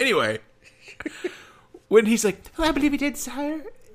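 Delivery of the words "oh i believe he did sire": high animated-film cartoon character voice. Discussing an old film, the speaker quotes a character's line: cartoonish voice. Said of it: "is he a cartoon voice".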